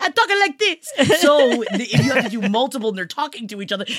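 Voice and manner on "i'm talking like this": put-on Italian accent, pitched very high. Showing the voice used for the Volturi in Twilight: Italian accent. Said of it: "all I can do is".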